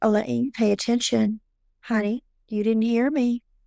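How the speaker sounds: very soft, soft-spoken voice. Quoting the voice that speaks to Elaine, in a very soft voice. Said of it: "she often comes across as a very soft voice".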